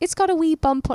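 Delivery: put-on Irish accent, high-pitched.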